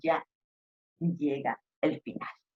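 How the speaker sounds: low, soft falling close at phrase end.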